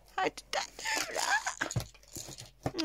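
high, squeaky, surprised whisper.

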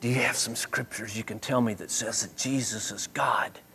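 very quiet, soft, hushed, secretive whisper. Retelling a church leader's phone call asking for scriptures: imitating someone whispering. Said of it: "he was whispering".

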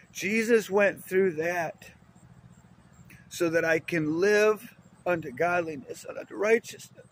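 slightly emotional, heartfelt delivery. Giving a testimony about Jesus to listeners: a little emotional. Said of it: "I get a little emotional".

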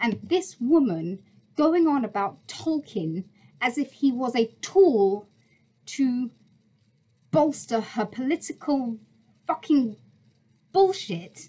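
furious, fed-up, angry rant with swearing. Reacting to something a woman said, the speaker is angry. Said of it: "but I am just so angry by this".

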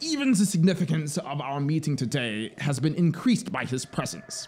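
grand, pompous, flattering oratorical tone. In the drama, the officer imitates the colony commandant addressing the meeting in a thunder voice. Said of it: "I hear his voice. The vermin call it a thunder voice, and he is now speaking".

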